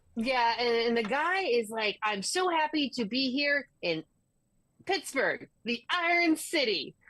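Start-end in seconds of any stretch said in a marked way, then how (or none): 2.0-6.8 gushing, overly bubbly showman host voice. Retelling what a Disney on Ice host said: imitating an overly bubbly host. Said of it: "overly bubbly and everything 'cause it's Disney on Ice".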